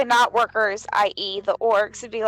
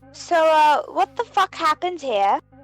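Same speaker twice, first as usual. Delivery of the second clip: American-sounding put-on British accent, pitched high; 5 semitones higher than usual. Playing a character who must remember a British accent, American doing British accent. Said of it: "had to remember my accent".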